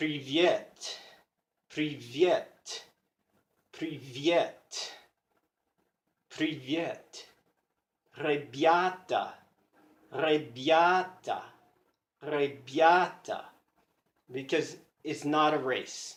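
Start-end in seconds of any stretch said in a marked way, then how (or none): 0.0-13.4 very slow, deliberate, word-by-word repetition. Showing how they practice russian words by repeating them: slow, repeated practice. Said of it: "by first saying it slowly over and over".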